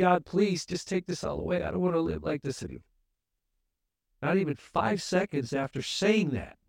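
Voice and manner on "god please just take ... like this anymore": put-on crying out, much faster. Speaker retells a moment from his past as a sinner, crying out to God. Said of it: "And I cried out".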